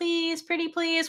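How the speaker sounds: high, super cute voice. Retelling a scene where May begs Ai to come over: May's super cute begging voice. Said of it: "she uses her super cute voice to beg".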